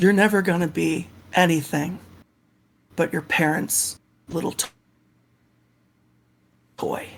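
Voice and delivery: hushed, villainous half-whisper, close to the ear. Voicing a character who cradles someone's face and half-whispers: half-whispering in character. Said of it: "nuzzles in and whispers in your ear".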